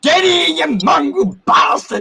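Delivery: put-on shrill, high-pitched, loud yelling. Showing what the speaker yells at the dogs, yelling at a dog. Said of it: "that's what I yell at my dog".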